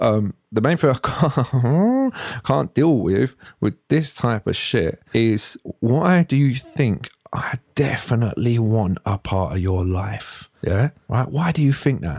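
irritated, fed-up, vexed, angry rant. Ranting to the camera about people getting on their nerves: vexed and angry. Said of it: "I'm quite vexed".

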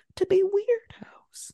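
slow, high whispering.

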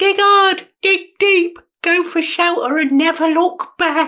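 very high, scrappy street-urchin voice. Answering the group's question of what to do, in an urchin voice. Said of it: "I love your patented urchin voice".

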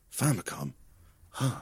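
mock dramatic delivery. Retelling a film character's line about a company: imitating dramatic pauses. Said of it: "He loves doing his dramatic pauses".

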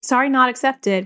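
obnoxious, sarcastic tone. Retelling the reply given to a child's apology: imitating own obnoxious sarcastic reply. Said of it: "I say it in an obnoxious way, like, sarcastically".

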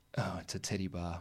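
deflated, disheartened voice, very soft and hushed. Retell what someone walking with you said on seeing a big sign, imitating a most disheartened voice. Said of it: "in the most disheartened voice I've ever heard".

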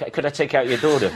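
plain

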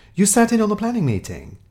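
cheery, cheerful voice pitched way up, very high. Tom answers the inspector rounding on them, cheerful. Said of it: "said Tom cheerfully".

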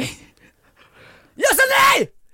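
very high, shrill screaming. The speaker retells a guard screaming at them; retelling a scream. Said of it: "Då skriker han på mig".

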